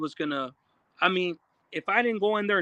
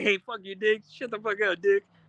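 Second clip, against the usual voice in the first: put-on casual, friendly, playful teasing tone; 2 semitones higher than usual. Retelling how another person said it, not disrespectfully: imitating a casual friendly insult. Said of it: "That's how he said it".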